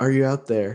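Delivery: hushed whisper. Playing a character who whispers into a body's ear: whispering. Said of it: "I just kind of whisper".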